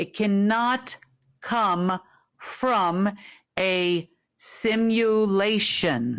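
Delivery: deliberate, measured, slow, careful, every word placed. Explaining something to listeners so they can understand, slow and careful. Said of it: "I'm saying this very slowly and carefully".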